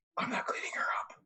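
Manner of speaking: whispering. Speaking in character to Skitters, whispering in character. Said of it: "I turn to Skitters and I whisper".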